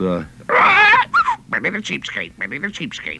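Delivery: put-on talking-parrot voice. Recalling a line he voiced for a parrot that couldn't talk, parrot voice. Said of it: "I had to do the voice for that".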